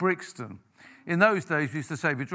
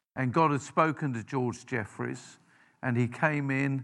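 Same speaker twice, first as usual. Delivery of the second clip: plain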